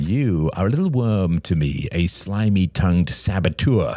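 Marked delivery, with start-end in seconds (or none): none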